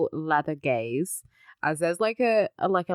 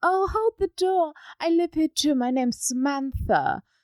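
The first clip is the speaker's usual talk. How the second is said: put-on British voice, very high; 11 semitones higher than usual. Retelling a scene, imitating Samantha in a more British voice. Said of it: "she doesn't talk like that, but it's my new".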